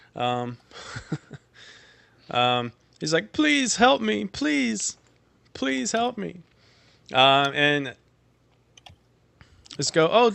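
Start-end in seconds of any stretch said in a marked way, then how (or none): 3.4-6.4 very high, crying, sobbing, pleading voice. Game master voices a goat in trouble begging the players for help: crying and pleading. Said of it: "he just starts crying".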